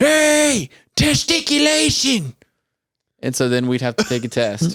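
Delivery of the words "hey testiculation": shrieking, very high screamed yell. Act out what he does when it gets overwhelming, imitating someone screaming. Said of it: "he'll scream and he'll go".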